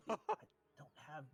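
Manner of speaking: faint, weak voice. Voicing a hurt character on the ground calling for help: faint voice. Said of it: "you hear his faint voice".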